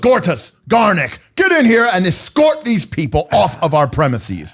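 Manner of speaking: abrupt, sudden, high, angry yell. In his own home, he calls Gortus and Garnick to escort the people out, suddenly shouting. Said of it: "He suddenly shouts out".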